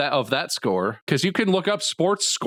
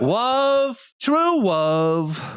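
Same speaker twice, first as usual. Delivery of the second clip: "love" stretched out, kept high in pitch; 8 semitones higher than usual. Quoting the officiant who marries the prince and princess: Princess Bride wedding officiant voice. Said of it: "the guy who's trying to marry the king to the princess in Princess Bride".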